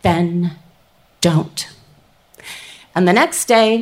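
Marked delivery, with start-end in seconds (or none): 0.0-1.7 steady, even, very low, incredibly calm voice. Retelling a woman's reply to them, the speaker imitates her calm, steady voice. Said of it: "in this incredibly calm, steady voice".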